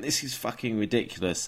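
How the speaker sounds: play-acted, fed-up, screaming rant. Retelling screaming at a TV episode: imitating himself screaming at the TV. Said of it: "I'm screaming at it the whole time".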